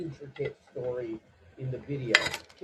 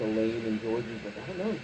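ordinary delivery

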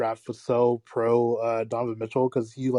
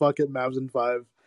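usual speaking voice

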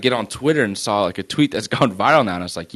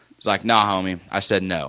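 ordinary delivery

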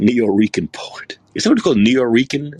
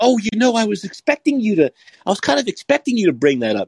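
high, mocking put-on voice. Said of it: "She goes".

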